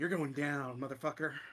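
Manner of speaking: put-on, energized, taunting delivery. Voicing Rhea, brimming with haste energy, taunting a foe: Rhea voice, brimming with energy. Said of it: "brimming with the, uh, haste energy from Mortimer's item. She goes".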